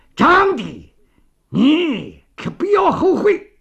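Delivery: slow, rising shout through gritted, clenched teeth. A man steps toward the door and shouts after someone who stormed out: shouting through gritted teeth. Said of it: "咬牙切齿地大喊".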